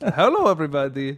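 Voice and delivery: put-on alien voice with a Russian accent. Repeating a movie character's greeting: imitating a russian alien character. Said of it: "that character in Village of the Damned".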